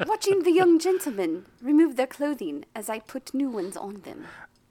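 loud, high, lofty upper-class posh accent. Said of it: "You sound so fucking posh".

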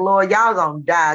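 plain

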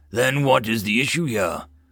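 plain reading voice

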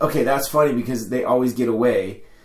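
usual speaking voice

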